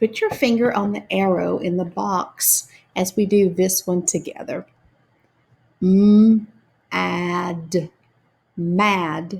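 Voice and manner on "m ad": slow, stretched-out sounds, louder. Guiding listeners through sounding out a word together, saying sounds slowly. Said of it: "saying their sounds slowly".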